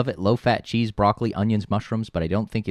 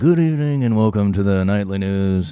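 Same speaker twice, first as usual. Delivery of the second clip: put-on old-fashioned announcer voice, louder; 5 dB louder than usual. Speaker says his voice always drifts into an impersonation: Walter Cronkite news voice. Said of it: "every time I do a news voice".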